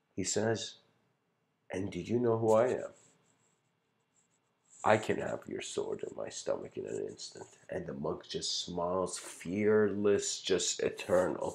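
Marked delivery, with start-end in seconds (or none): 1.7-7.5 serene, undisturbed, gracious, very gentle and graceful delivery. Retelling a parable, voicing the monk's calm reply: voicing a monk very gently. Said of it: "very gently and gracefully".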